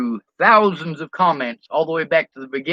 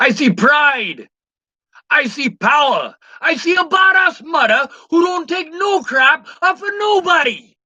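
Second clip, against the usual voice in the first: very high, slow, drawn-out put-on Jamaican accent; 11 semitones higher than usual. Quoting a movie line: jamaican accent. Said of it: "I tried to do it in a Jamaican accent".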